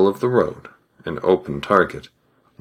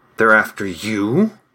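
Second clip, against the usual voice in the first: hissed, hissing voice; 3 semitones higher than usual. A man hears trumpets and looks back at his companion, hissed. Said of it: "he hissed".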